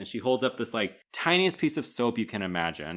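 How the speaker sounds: ordinary delivery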